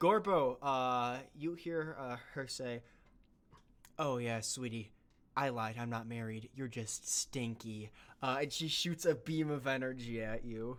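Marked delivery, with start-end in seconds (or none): 4.0-7.9 low, mean, nasty and insulting mocking tone. Voicing a villain who lies to a hero: mean mocking tone. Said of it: "I could tell from her tone".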